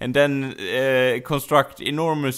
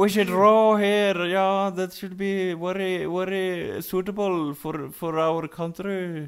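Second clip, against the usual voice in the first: terrible Irish accent drifting Scottish, pitched up; 6 semitones higher than usual. Urged to continue, the speaker keeps up a bad Irish accent. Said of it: "That's pretty Scottish".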